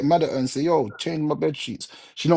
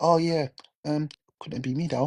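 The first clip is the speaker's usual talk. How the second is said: mock-sweet, fake-nice put-on tone, quieter; 4 dB quieter than usual. Imitating people who dislike you but still talk sweetly, mock-sweet fake-nice tone. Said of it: "they'll say things with the nicest tone".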